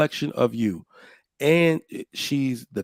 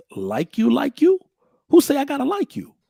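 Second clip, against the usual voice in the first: very high voice swinging widely in pitch; 13 semitones higher than usual. Quoting a line from Fences in the speaker's put-on voice: Denzel voice. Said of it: "In my Denzel voice".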